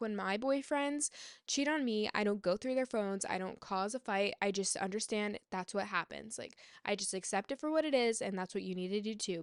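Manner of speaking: usual speaking voice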